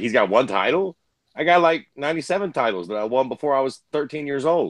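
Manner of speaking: usual speaking voice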